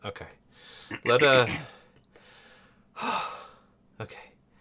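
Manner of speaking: puffing, short of breath, winded speech. Just back from chasing someone around, out of breath. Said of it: "Sorry, I'm so winded".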